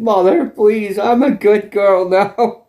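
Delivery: imitated crying, mock-crying voice. Retelling a character pleading with her mother, imitating crying while pleading. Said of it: "She's crying".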